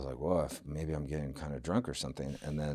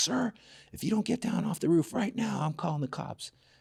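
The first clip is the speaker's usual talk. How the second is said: mock very high, raspy, rough yelling; 6 dB louder than usual. Retelling how the restaurant manager yelled at him on the roof: imitating the manager yelling. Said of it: "yelling at me".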